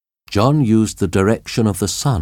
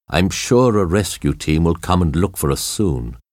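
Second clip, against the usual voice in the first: ordinary delivery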